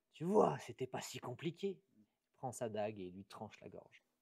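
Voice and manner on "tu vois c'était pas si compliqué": words laced with a mean, sneering chuckle. Voicing a fire genasi who has just finished torturing a tavern keeper: snickering while speaking. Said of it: "qui ricane et qui dit".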